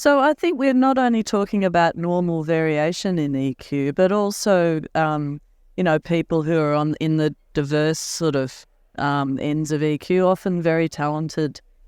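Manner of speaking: normal talking voice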